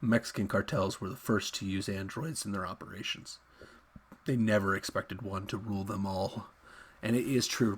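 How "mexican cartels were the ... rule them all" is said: put-on deep, dropped, solemn reading voice. Restarting a line read aloud, done in a put-on deep voice. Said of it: "I'm going to break out a little bit of deep voice".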